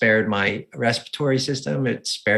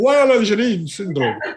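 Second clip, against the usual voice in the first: put-on French accent, much higher pitch; 9 semitones higher, 4 dB louder than usual. Speaker repeats a term and it slips into a French accent. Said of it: "I always do everything with an Indian accent, but that tried to come out French".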